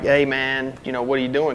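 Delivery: normal talking voice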